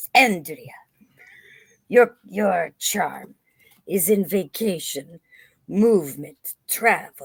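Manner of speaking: put-on cat character voice in a Spanish accent. Speaker imitates a cat that reads for andrea, with the cat's accent. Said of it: "his accent is like this".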